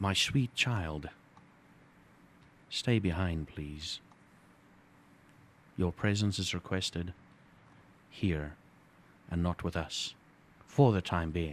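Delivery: soft-spoken, gentle, courteous tone. Posing a scenario to Blaine, playing a man who cuts in front, soft-spoken. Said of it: "He's very soft-spoken".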